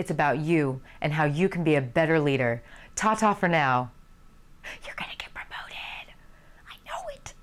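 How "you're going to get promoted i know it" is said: soft, whispered, reassuring, encouraging tone. Closing a talk on being a better leader, whispering.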